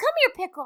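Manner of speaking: put-on very high baby-talk voice. Describing calling a puppy over after a masculine sport, in baby voice. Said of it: "use baby voice".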